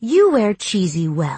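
plain

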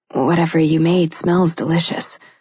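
plain

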